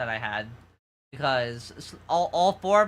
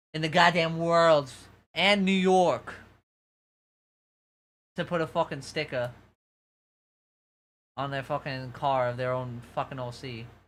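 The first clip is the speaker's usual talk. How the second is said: New York accent slipping through. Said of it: "this accent is popping out too".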